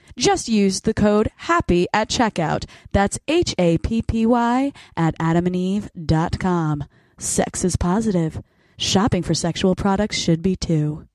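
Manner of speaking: put-on sexy voice, ad-read style. Reading a sponsor ad on the podcast, in a put-on sexy voice. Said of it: "Time for my sexy voice".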